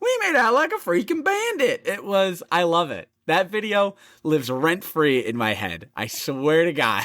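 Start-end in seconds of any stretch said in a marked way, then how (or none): 0.0-1.8 gleeful, happy little voice, very high-pitched. Retelling a friend's dad's happy line after a restaurant visit: imitating dad's happy little accent. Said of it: "an innocent twinkle in his eye".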